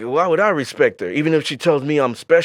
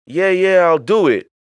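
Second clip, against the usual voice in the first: dismissive, mock placating, passive-aggressive brush-off; 3 semitones higher, 4 dB louder than usual. Acting out a reply to a request: imitating a passive-aggressive guy. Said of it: "maybe the passive-aggressive guy".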